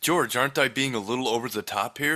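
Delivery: plain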